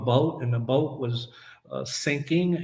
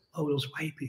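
secretive, hushed stage whisper; 9 dB quieter than usual. Imitating how some people say it, imitating a whisper. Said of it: "they gotta whisper".

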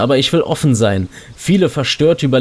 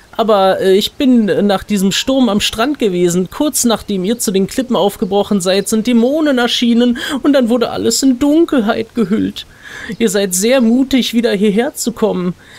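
kind, friendly put-on elf woman voice, pitched up; 9 semitones higher than usual. Reading a game's quest text aloud for the audience, voice the nice elf lady. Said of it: "Wir wollen mal dieser netten Elfendame, die uns hier in der Introsequenz so nett zugewunken hat".

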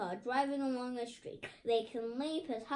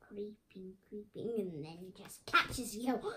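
creepy, spooky voice, lower; 4 semitones lower, 3 dB quieter than usual. While reading aloud about whale species, creepy voice. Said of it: "I'm still being creepy now".

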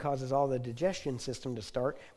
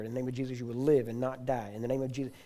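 ordinary talk

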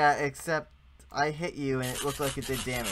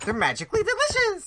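squeaky, very high-pitched, loud voice; 7 dB louder than usual. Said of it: "my voice always goes so high pitched when I say that".

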